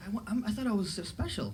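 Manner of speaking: high, hurt, wounded, insecure demon whine.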